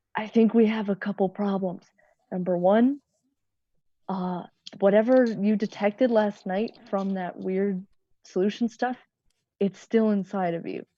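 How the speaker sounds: whispering in a character voice. Whispering into another character's ear about problems: whispering in character. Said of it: "I'm gonna whisper".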